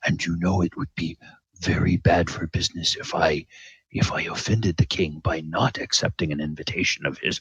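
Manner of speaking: low, hushed tone. Recounting what a man said to him, retelling a lowered voice. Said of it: "he lowers his voice and he says".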